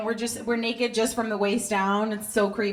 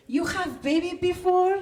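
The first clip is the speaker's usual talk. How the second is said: slow, attempted put-on Russian accent; 8 semitones higher than usual. Quoting a woman doing a waxing in Pasadena, in put-on Russian accent. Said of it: "I'm going to attempt a Russian, a Russian accent".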